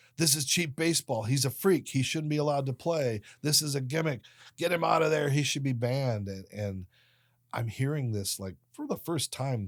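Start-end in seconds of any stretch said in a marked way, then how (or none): 0.2-6.3 put-on high-pitched screaming heckler voice. Retelling a heckler at a high school game: imitating a man screaming. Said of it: "He starts screaming".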